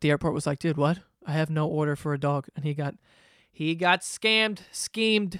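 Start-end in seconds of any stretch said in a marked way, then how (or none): none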